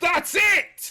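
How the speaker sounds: very high-pitched, super loud shout. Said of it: "That was super loud".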